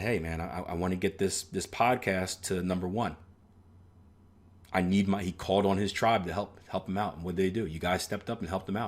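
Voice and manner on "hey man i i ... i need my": ordinary talk, nothing marked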